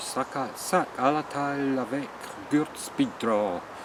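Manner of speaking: French accent, French pronunciation.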